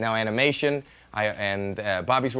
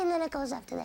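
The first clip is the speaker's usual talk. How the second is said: very high, tight, squeezed voice. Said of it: "tighten it up real high".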